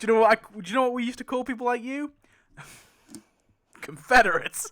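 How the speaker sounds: very loud, high-pitched, belted character voice. Retelling Merle objecting to Dawn: Merle voice. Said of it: "Merle's like".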